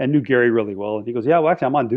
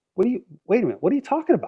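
very high-pitched, fake bewildered, confused tone; 11 semitones higher than usual. Retelling being arrested in a prank, imitating his own acted confusion. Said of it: "I shoulda won an Oscar".

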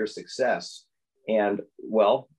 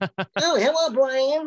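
very high, tiny, squeaky cartoon-bird voice; 3 dB louder than usual. Showing how he voices a cartoon character, in Tweety voice. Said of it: "I do Tweety like this".

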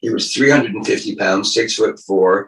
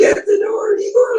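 tiny, very high, slow, humorless voice. Retelling how an actor read his line, imitating a tiny whisper. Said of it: "you could hardly hear him".

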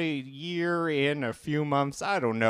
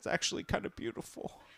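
whispered, rushed, mock choked-up emotion. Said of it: "Sorry, I'm choked up".

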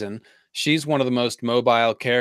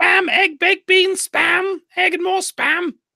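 put-on very high, loud, squealing old lady voice. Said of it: "my Monty Python old lady accent".

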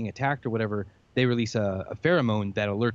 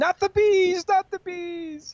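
put-on, very high, shrill scream; 4 dB louder than usual. Describing a memed movie scene, imitating Nicolas Cage screaming. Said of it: "he starts screaming".

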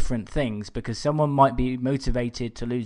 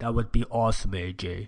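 put-on Austrian-style accent; 3 semitones lower, 3 dB quieter than usual. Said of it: "You're getting better at that accent".

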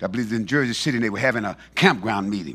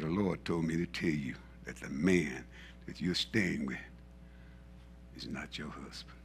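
hushed, soft, secretive whisper; 6 semitones lower, 14 dB quieter than usual. Retelling a private message given to a mother: retelling a whisper. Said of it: "And I whispered in her ear".

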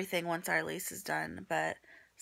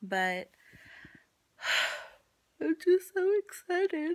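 talking through a yawn, higher and louder; 12 semitones higher, 5 dB louder than usual. Announcing a pregnancy to viewers, yawning while talking. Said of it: "I sound so excited as I'm yawning".

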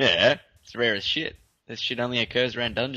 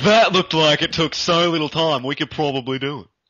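loud voice dripping with sarcasm; 4 semitones higher, 6 dB louder than usual. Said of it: "I'm going to stop with that sarcastic voice".

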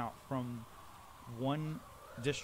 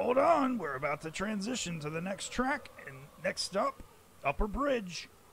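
small, tinny announcement voice, high and loud; 7 semitones higher, 5 dB louder than usual. Narrator voices what you hear between the towers: little tinny voice. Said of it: "you hear the little tinny voice say".

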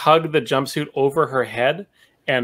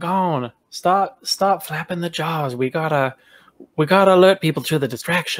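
whispered; 2 semitones higher than usual. Role-play player speaking in character to Gon, whispering. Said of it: "So I kind of whisper to Gon".

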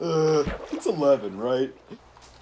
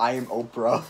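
usual speaking voice

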